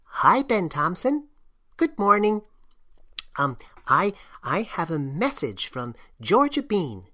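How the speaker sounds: faint, small, thin, tiny mouse voice. Narrator reads a mouse greeting Ben Thompson in the morning: small thin mouse voice. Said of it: "the small voice of one of these mice".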